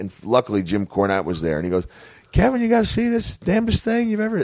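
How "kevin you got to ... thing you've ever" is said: very high-pitched voice. Telling a wrestling story, the speaker quotes a man addressing Kevin: Jim Cornette high voice. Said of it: "he's got a high voice".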